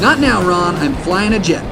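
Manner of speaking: ordinary talk, nothing marked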